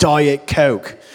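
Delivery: put-on yelling. Retelling how a family member quotes a comedy bit: imitating someone yelling. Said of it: "wander around the house yelling".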